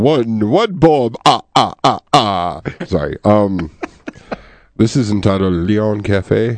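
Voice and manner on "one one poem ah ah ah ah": loud, booming put-on voice. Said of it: "My Count accent from Sesame Street".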